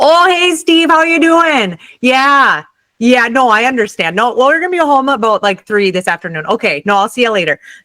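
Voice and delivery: put-on Midwest accent. Acting out a phone call with an uncle, in a very strong Upper Midwest accent. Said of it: "very strong um, Upper Midwest accent".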